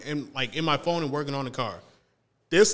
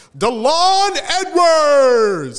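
high, loud, slow, drawn-out yell.

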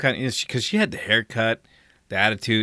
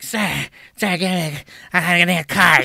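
mock frantic voice, higher and louder; 8 semitones higher, 5 dB louder than usual. Retelling a woman demanding a cart: imitating a woman getting crazy. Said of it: "she's getting all fucking crazy".

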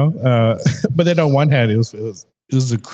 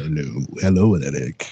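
very deep, low haunted-house voice; 9 semitones lower, 4 dB quieter than usual. Showing the voice they would be set on: Haunted Mansion voice. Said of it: "the Haunted Mansion type of voice".

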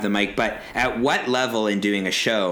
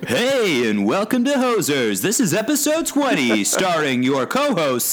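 swooping, pitched-up radio announcer host voice; 9 semitones higher, 4 dB louder than usual. Asked by co-hosts to do his radio voice for the show intro: radio announcer voice. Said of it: "Do your radio voice".

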